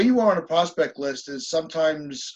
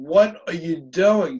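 imitated screaming; 3 dB louder than usual. Retelling a reaction to a manager's pitching change: imitating own screaming. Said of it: "I was screaming".

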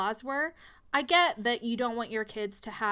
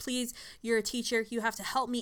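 acted desperate begging, mock-pleading tone. Recapping a story, acting out a desperate town lady begging a teacher, imitating someone begging. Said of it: "She's begging Elizabeth".

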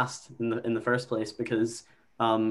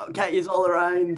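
put-on drunk voice, higher pitch; 7 semitones higher than usual. Retelling what a drunk best mate said in the pub: imitating a drunk friend. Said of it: "he was pretty steaming".

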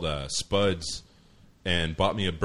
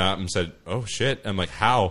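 normal talking voice

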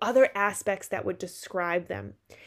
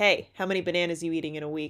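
confrontational, aggressive, pressing tone; 3 semitones lower than usual. Acting out an interviewer cornering someone in an alley: confrontational. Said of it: "All confrontational".

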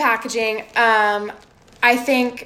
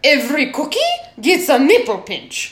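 put-on male French accent with swooping pitch; 2 semitones higher than usual. Describing how the cookies were made, the speaker switches into a male French accent. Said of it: "wait let me do a french accent okay".

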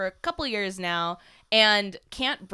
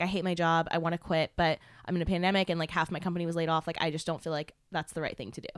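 ordinary talk, nothing marked

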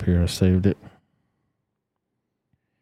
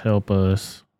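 ordinary talk, nothing marked

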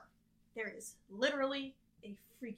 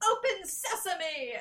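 very loud, high yelled shout; 8 semitones higher, 9 dB louder than usual. Recapping a cartoon scene, acting out the scientist shouting his code: shouting.

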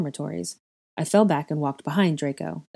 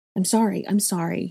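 panicked, frightened whisper; 3 semitones higher than usual. Narrator voices the speaker apologizing to a companion who fell, panicked whisper. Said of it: "I whispered, panicked".

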